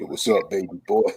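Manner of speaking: very low, deep, dropped-down voice. Joking that someone sounds like Ving Rhames: Ving Rhames deep voice. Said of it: "he got a deep voice".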